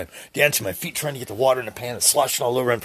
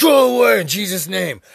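loud, high, forceful rebuke at full force. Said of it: "As hard as you can".

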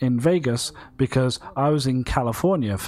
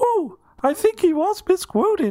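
pitched way up, cartoon-style voice. The speaker announces they will say it as Mickey Mouse: Mickey Mouse voice. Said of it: "I'm going to do this in the voice of Mickey Mouse".

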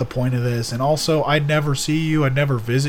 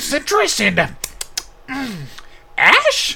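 put-on puppet voice, much higher; 11 semitones higher than usual. In a chat about smoking while cooking, asking about a flavor in a Muppet voice. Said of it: "You sound like a Muppet".

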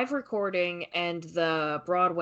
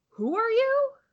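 mock very high-pitched, startled, incredulous disbelief; 4 dB louder than usual. Retelling a musical scene, a woman reacts to a stranger: imitating Eurydice reacting incredulously. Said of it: "reacts as any sane woman would".

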